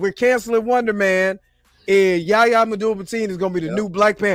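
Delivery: normal talking voice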